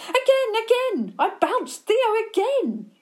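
very high-pitched, loud shouted call. Reading a story aloud, voicing a character's line: shouting.

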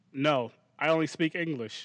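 ordinary talk

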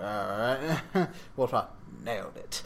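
put-on mutter, mumbled. Describing a film scene, acting out a man walking past soldiers, retelling a mutter. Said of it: "just kind of mutters something like".

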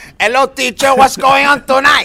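put-on shrill, loud, belted-out gangster accent. Imitating own childhood speech at school: Tony Montana accent. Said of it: "I sounded like Tony Montana".

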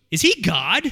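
sudden, high, loud, stunned, awed voice.

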